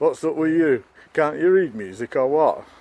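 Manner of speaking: put-on loud, high-pitched Yorkshire accent. Retelling what a man said to them in front of the group: yorkshire accent. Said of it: "let me put it in a Yorkshire accent".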